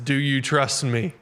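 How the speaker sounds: put-on booming divine voice. Retelling a joke, voicing God answering from the storm: thundering God voice. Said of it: "God thunders back".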